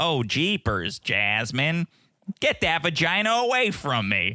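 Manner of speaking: put-on Minnesota accent, slow and high-pitched.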